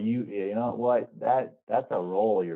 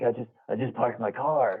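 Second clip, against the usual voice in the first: put-on freaked-out voice. Imitating Kramer bursting through the door: imitating Kramer freaking out. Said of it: "what are you freaking out about".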